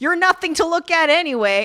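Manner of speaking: high, screamed, scornful voice. Retelling a drama scene where he screams at her: imitating someone screaming. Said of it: "He's screaming at her".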